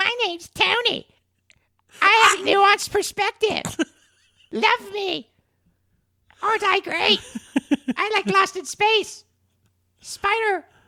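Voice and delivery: very high, needling, teasing caricature voice. With both mics by you, asked to do different voices, show Tony how he sounds: Tony impression. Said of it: "That's what you sound like right now".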